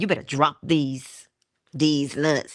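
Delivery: normal talking voice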